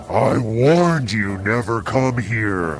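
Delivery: ordinary delivery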